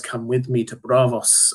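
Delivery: plain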